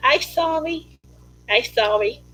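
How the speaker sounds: slow, meek, humble and sincere voice. Speaker shows the voice they use when getting on their kids: humble voice. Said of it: "That's my humble voice".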